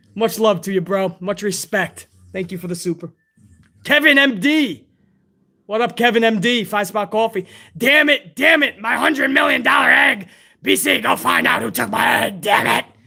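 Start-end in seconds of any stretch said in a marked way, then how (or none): 7.8-12.9 rough, creaky, rasped-out outburst. Reading out a fan's donation, doing a Vince McMahon impression. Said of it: "That's my Vince McMahon impression".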